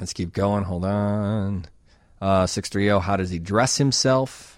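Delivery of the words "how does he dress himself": ordinary talk, nothing marked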